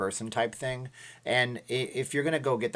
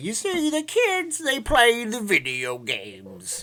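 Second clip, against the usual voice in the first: bad put-on very high, loud, slow, swooping, sing-song voice; 11 semitones higher, 5 dB louder than usual. Talking about arcades, then doing a terrible Bill Cosby impression. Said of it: "It's a Bill Cosby impression that was terrible".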